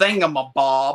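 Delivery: slow, loud Southern drawl on thingamabob. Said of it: "in that Southern accent of hers".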